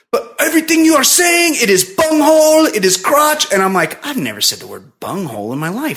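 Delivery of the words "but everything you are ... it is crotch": high, loud, put-on German accent. Quoting the husband's words back to the speaker, in a german accent. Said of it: "he has a German accent".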